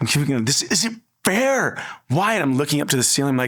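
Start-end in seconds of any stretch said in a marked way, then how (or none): 0.5-2.3 very slow, high, furious, drawn-out outcry. Retelling kicking boxes after a phone call: retelling an angry outburst. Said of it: "I was so mad".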